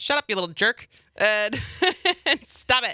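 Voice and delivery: irritated, high, annoyed scolding tone. Speaker acting out their own reaction when the dog barks: mock-annoyed scolding. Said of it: "not my reaction when Cliff barks".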